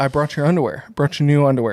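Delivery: ordinary delivery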